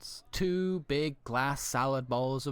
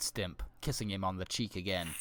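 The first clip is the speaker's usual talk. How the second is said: plain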